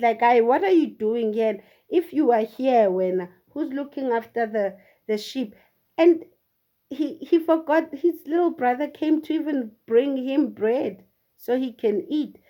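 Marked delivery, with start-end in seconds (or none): none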